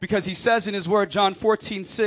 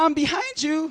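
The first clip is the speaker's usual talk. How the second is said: put-on tiny, small, high voice of a little girl; 8 semitones higher than usual. Retelling how a small child played hide-and-seek: imitating a child's small voice. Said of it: "all I hear is a small voice".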